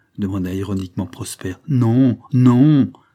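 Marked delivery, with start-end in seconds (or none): 1.7-2.9 very loud, flustered cry. The young woman answers Prosper's ironic question about Marianne, cried out, flustered. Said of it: "s'écria la jeune fille troublée".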